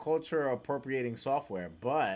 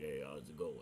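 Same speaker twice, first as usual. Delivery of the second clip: put-on low-pitched Philadelphia Italian accent; 10 semitones lower, 11 dB quieter than usual. Retelling how a man greeted you after changing his voice, use a Rocky Balboa voice. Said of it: "he sounded like Rocky Balboa".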